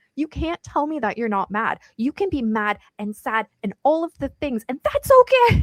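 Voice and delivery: mock furious outburst, high, angry yell. Telling a family story, speaker reenacts yelling at aunts and mom: retelling angry yelling. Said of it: "I start yelling at him".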